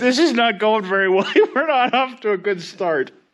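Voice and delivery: laughing while talking. Starting a job in the shop with the giggles: laughing while talking. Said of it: "I can't stop laughing".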